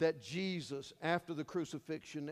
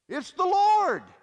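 piercing, shrill, very loud shriek; 17 dB louder than usual.

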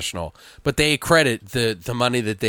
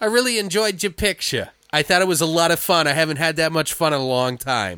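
put-on high, made-up elderly woman voice; 7 semitones higher than usual. Retelling what an old lady told the filmmakers: put-on accent imitating an old lady. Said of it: "I'm just making an accent".

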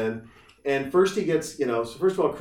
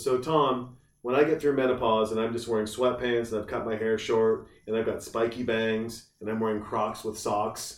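ordinary talk

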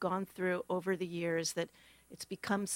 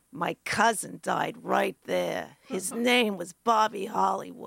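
put-on thick, loud New York accent, laid on heavily; 5 dB louder than usual. Recalling a stranger's voice behind them at a Manhattan market: thick New York accent. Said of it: "in this really thick New York accent go".

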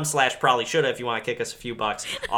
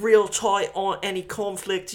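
put-on British accent, higher pitched; 8 semitones higher than usual. Retelling what the documentary guy says: Jamie from Ted Lasso impression. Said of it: "doing an impression of Jamie from Ted Lasso".

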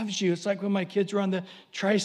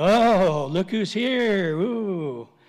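mock, very slow, loud, drawn-out, dripping sarcasm; 4 dB louder than usual. Acting out an angel greeting someone knocking at the door again, mock-sarcastic. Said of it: "And now everybody's getting sarcastic".

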